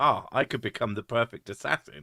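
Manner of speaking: ordinary talk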